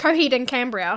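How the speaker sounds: fast, rushed, squashed run-together word. Showing how a band name sounds, said really quickly. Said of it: "When I say it really quickly".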